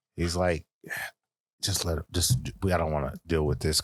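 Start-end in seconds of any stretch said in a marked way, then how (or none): 1.7-3.8 stage-whispered aside. Retelling what the branch manager said: imitating a whisper. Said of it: "he whispers or something".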